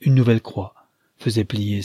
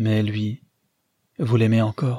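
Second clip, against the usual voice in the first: plain reading voice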